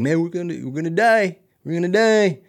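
high, crying, panicked, despairing voice. Retelling a friend crying while lost in a forest: imitating a crying friend. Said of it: "he's crying".

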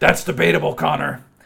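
loud, rough, raspy voice. Reading out a note written in all caps: imitating Marler's low raspy voice. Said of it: "Very, very low, low, raspy voice".

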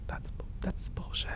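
muttering under the breath. Retelling a man reacting as the speaker read out a list, muttering under his breath. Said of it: "saying like under his breath".

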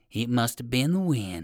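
plain

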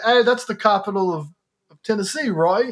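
bad put-on English accent. Retelling what a man from England asked the speaker, in a bad English accent impression. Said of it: "this is my bad impression".

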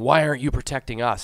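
put-on, screamed, demanding yell. Retelling a guy's words to a riot cop: imitating someone screaming. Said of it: "he's screaming".

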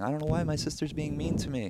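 very high, weepy, tearful crying voice. Retelling a drunk phone call from their mom: imitating someone crying. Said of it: "She's crying and saying".

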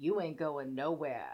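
very low, deep, put-on man's voice. Retelling a TikTok scene, imitating a deep-voiced man blocking a doorway. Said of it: "they all have these amazingly deep voices".

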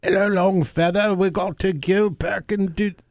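very high, very slow, drawn-out put-on accent drawl. Imitating people at the archery range using that accent: imitating people's accent. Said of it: "all those people using that accent".

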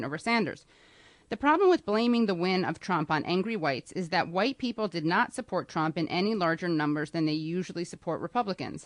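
ordinary talk

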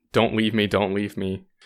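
ordinary talk

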